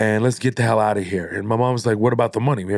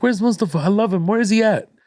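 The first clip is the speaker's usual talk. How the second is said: very high, frantic, freaking-out outburst; 10 semitones higher than usual. Retelling an official hearing news of a friend: imitating someone freaking out. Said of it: "He freaks out".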